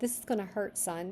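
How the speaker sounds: ordinary delivery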